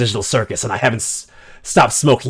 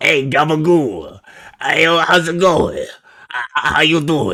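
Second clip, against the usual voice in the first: fake, put-on Italian accent; 4 semitones higher than usual. Attempting an accent on the spot, in a fake italian accent. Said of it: "This accent is just divulging into insanity".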